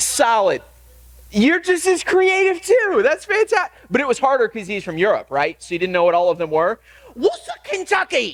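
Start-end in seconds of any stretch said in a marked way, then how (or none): 7.2-8.3 put-on British accent, pitched up. Saying place names aloud, the speaker tries a put-on British accent. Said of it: "That's my best British accent".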